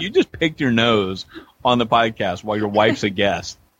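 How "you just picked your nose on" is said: plain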